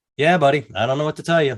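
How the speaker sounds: put-on completely even, detached, neutral tone. Retelling how he answered an angry fired worker on the phone, imitating his own neutral tone. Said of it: "completely neutral".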